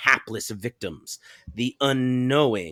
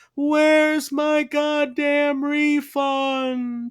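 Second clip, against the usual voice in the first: mock very high, very slow ghostly wail. Acting out damned souls who want a refund: mournful moaning. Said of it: "they moan".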